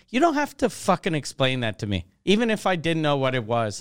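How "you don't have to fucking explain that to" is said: usual speaking voice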